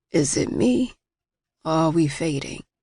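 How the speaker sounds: said in a low voice. Narrator reads Ellis glancing over his shoulder to ask the narrator: low voice. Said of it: "He asks in a low voice".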